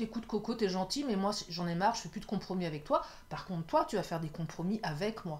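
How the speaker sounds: ordinary talk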